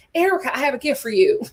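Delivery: put-on heavy Georgia accent, laid on. Imitating Sutton giving Erica a gift: thick Georgia accent as Sutton. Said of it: "the accent is thick from one Georgia girl".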